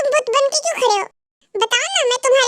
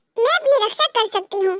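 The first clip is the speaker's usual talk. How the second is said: ordinary delivery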